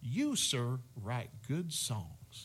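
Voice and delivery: put-on, swooping Northern Louisiana accent. Retelling what a man said while shaking his hand, imitating a Northern Louisiana accent. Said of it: "he's got this Northern Louisiana accent".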